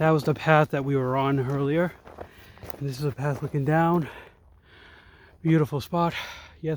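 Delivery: slightly winded, out of breath. Speaker showing viewers the path after climbing a steep hill, a little winded. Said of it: "I'm a little winded because of the steepness of the hills".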